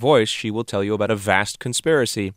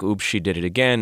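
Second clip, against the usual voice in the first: ordinary delivery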